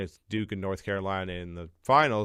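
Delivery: ordinary talk, nothing marked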